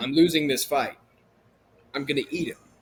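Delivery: ordinary talk, nothing marked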